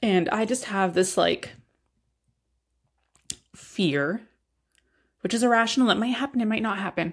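tearful speech through crying. Expecting a baby without their mom, the speaker admits a fear, crying while talking. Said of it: "the fact that I'm crying right now".

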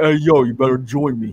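put-on street-tough, tough-guy Italian-American accent. Imagining a game's new main character, the speaker does a Stallone accent. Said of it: "She even has, like, a Stallone accent".

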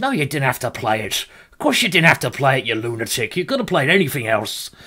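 clumsy, very bad put-on Irish accent. Retelling what people told him after a game: very bad Irish accent. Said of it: "that's a very bad Irish accent".

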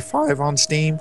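voice breaking and cracking. Asking JD a question during a charity live stream: voice cracking. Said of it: "my voice cracked".

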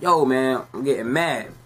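normal talking voice

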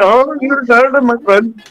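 put-on Indian accent. Speaker demonstrates his way of doing an Indian accent, in Indian accent. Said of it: "authentic Indian accent".

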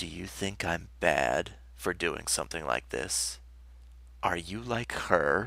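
soft, hushed, close whisper. A man suddenly leans nose to nose into a woman's face: whispered. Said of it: "He whispered".

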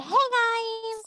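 put-on high nasal voice. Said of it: "she has her fucking nose stuff".

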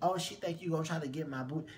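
ordinary talk, nothing marked

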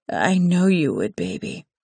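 low raspy seductive voice. The narrator, speaking to him, lowers her voice: low, sexy, raspy voice. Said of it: "I lower my voice, using a sexy, raspy tone".

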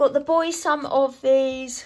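loud speech through a yawn. Showing snacks bought for the boys, yawning while speaking. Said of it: "sorry, yawning".

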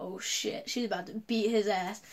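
plain

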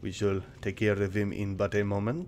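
poor put-on French accent. Voicing a character in the game, in a shitty mock French accent. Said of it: "I'm doing a shitty mock French accent".

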